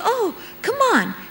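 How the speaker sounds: high-pitched, coaxing tone. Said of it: "Somebody says to you".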